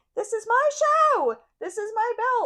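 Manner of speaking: very high, very loud, shrill, desperate hysterical ranting. Retelling a title match's closing moments, imitating Athena's desperate hysterical ranting. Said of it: "desperate hysterical heel mode".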